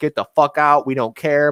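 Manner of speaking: put-on, toned-down hostile shouting, mildly angry yell. Retelling what people screamed in a gym video: retelling angry screaming. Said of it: "they were just screaming like".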